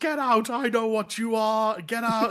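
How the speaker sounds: mock restrained yell, high and slow. Retelling a scene where a character puts on a helmet: imitating someone screaming. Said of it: "And he screams at him".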